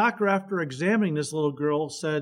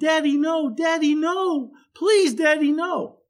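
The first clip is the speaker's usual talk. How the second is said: put-on very high, pleading, drawn-out little-girl screams; 12 semitones higher, 6 dB louder than usual. Retelling a story where a little girl is held down: imitating a screaming little girl. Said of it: "The little girl starts screaming".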